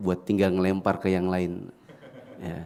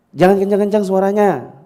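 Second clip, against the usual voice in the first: loud, high-pitched scolding. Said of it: "pas ngomong itu kencang juga".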